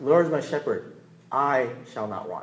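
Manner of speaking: "I" leaned on and stressed, slowed down.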